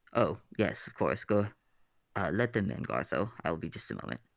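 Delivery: deep, low, rumbling voice. Game master voices someone inside the room answering the doorkeeper; deep rumbling voice. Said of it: "a deep rumbling voice".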